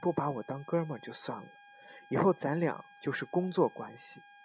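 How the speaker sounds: plain reading voice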